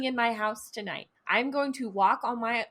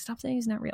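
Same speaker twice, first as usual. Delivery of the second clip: whispering close into the mic. Talking about a being that might be summoned: whispering into the mic. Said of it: "I'm gonna whisper into the mic".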